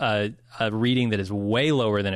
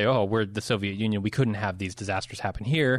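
normal talking voice

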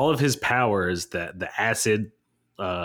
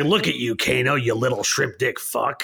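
put-on sleazy villain voice. Quoting a villain taunting Kano, in a put-on sleazy Kabal voice. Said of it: "I loved his like sleazy voice".

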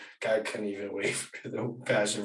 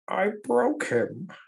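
raised comic-villain voice, very high and loud; 11 semitones higher, 5 dB louder than usual. Joining in quoting a movie villain: Bane voice. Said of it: "our Batman impressions".

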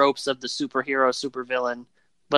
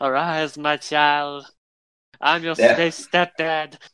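put-on slow, drawn-out, stupid, dopey old man voice; 2 semitones higher than usual. Quoting a movie line in the stupid old man voice: Marlon Brando send-up. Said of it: "his stupid voice he used as the, uh, old man".

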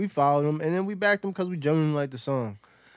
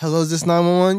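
mock, put-on phone-caller voice; 2 semitones higher, 5 dB louder than usual.

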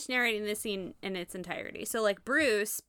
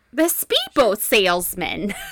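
put-on New York accent, louder; 9 dB louder than usual.

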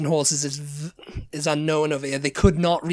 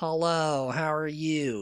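British speaker's put-on American accent, quieter; 5 dB quieter than usual. Imitating a British actor playing an American: generic fake American accent. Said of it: "it's like one of those generic".

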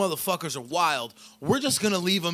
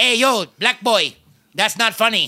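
put-on Filipino accent, street-slang style; 4 semitones higher, 9 dB louder than usual. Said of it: "his like, Filipino he'd be accent".

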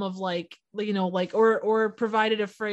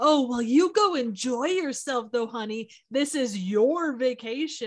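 mock sarcasm laid on thick, dripping and heavy; 2 semitones higher than usual. Acting out how he tells someone to enjoy the vacation: imitating heavy dripping sarcasm. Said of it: "it's done with such a, like, ... the dripping sarcasm".

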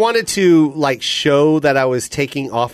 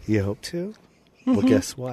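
creepy voice, dropping softer and quieter; 7 dB quieter than usual. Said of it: "you kept dropping your voice at the end there".

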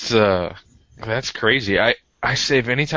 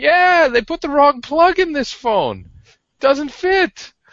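put-on high, loud Irish accent of an older speaker; 5 dB louder than usual. Retelling a coworker's complaint about his phone: older Irishman's accent. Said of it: "an older Irishman's accent".

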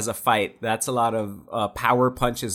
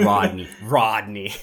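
mock disdainful, disgusted tone; 3 semitones lower than usual. Mimicking how a man said the name Rodney, mimicking a disdainful 'Rodney'. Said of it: "Just the way he said it with disdain".

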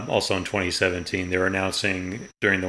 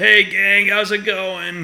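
very high, loud, drawn-out iconic voice; 13 semitones higher, 8 dB louder than usual. Retelling the air show guest's greeting from the flight line: imitating Stanley's classic voice. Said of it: "Just in this classic, iconic voice".

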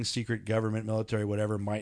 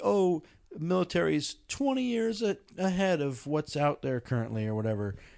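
scornful, mocking parroting tone, pitched up; 7 semitones higher than usual. Asking the group about a claim many people make, mocking what people say. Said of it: "Why are you mocking it?".

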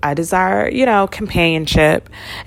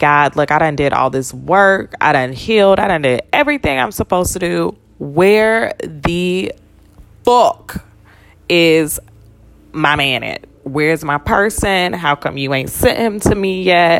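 ordinary talk

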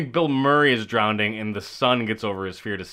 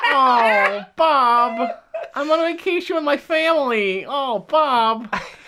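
higher-pitched, complaining put-on voice; 13 semitones higher, 4 dB louder than usual. Doing a Richard Dreyfuss impression for the others: Richard Dreyfuss impression. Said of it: "That's a really good Richard Dreyfuss".

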